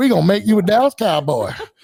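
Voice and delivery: put-on country voice. Retelling a draft call from Jerry Jones: imitating Jerry Jones's country voice. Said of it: "he's got that country voice".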